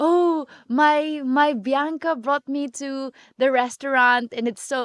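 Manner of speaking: put-on proud-sounding, slow Filipino accent. Quoting mom telling everyone back home in the Philippines; imitating a Filipino accent. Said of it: "with a Filipino accent and everything".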